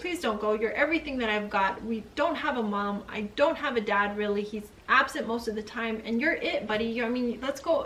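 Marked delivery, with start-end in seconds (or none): none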